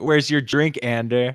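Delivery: mocking, really sarcastic, dripping with sarcasm. Retelling a friend's mom asking about a drink: imitating a sarcastic question. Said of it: "in that really sarcastic".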